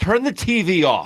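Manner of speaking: slow, firm, stern delivery. Showing how a parent should tell a kid to turn off the TV: firm parent command. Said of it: "No, it's".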